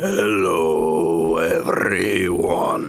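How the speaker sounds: slow vampire voice. Just introduced as a podcast guest, greeting everyone in a slow Count Orlok voice. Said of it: "He speaks so slowly".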